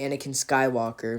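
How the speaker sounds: plain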